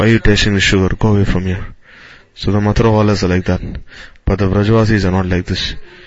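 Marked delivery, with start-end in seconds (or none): none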